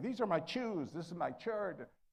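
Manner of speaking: put-on heavy Mexican accent, strongly laid on. Recalling how he used to talk while practicing his delivery, heavy Mexican accent. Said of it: "I had a heavy Mexican accent".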